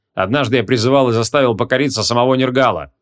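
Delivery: ordinary delivery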